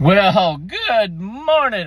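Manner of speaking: high-pitched voice, cracking. Greeting listeners at the start of a live morning broadcast, voice cracking. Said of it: "My voice cracking".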